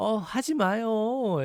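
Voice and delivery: light playful teasing. Showing how a girlfriend being tickled tells her boyfriend to stop; playful joking tone. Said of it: "It's kind of like joking".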